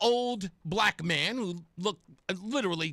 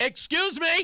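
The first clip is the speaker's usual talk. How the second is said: pitched-up shout, loudly called out; 8 semitones higher, 4 dB louder than usual. Retelling interrupting people talking at a protest: retelling his own shout. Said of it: "which prompted your humble host in the middle of all of this to shout".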